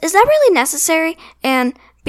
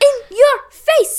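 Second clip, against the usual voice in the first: put-on high-pitched voice with Indian accent; 12 semitones higher than usual. Recapping the bowling scene of an episode, quoting Baljeet, Baljeet voice. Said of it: "I was doing an accent".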